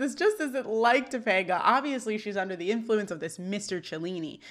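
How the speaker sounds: normal talking voice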